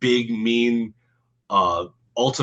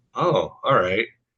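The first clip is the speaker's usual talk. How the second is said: put-on, suddenly intrigued, super interested tone. Retelling a man's reaction as others save the day: imitating someone intrigued. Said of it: "Like he's like super interested".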